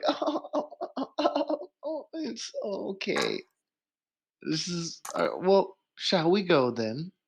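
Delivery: mock stifled giggle, high-pitched little-girl voice. Speaker retelling her reaction, imitating a stifled girlish giggle. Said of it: "the whole like little girlish giggle where she's like".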